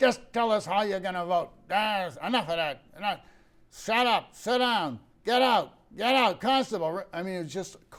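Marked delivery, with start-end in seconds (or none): 0.0-7.0 really gruff, heavy-handed, raised voice. Imitating the man who kept cutting off every person at the microphone: gruff voice. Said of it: "just with a real gruff voice".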